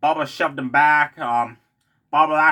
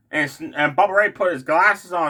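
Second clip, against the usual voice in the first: ordinary talk, nothing marked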